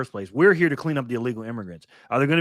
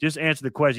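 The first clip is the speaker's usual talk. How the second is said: usual speaking voice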